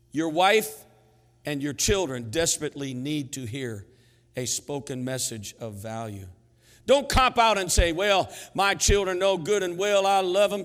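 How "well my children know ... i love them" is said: put-on Southern accent. Speaker acting out a father's excuse to his family, in a southern accent. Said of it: "I get in this southern accent".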